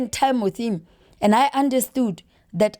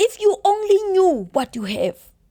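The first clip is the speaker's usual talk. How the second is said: high, put-on Nigerian accent, woman's voice; 8 semitones higher than usual. Retelling what a woman used to say, imitating a Nigerian accent. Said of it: "It sounded like a Nigerian lady".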